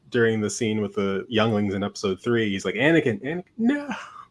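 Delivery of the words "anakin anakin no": mock high, raised yell. Imagining the same yell in another scene: imitating Qui-Gon yelling. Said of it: "you hear Qui-Gon yelling".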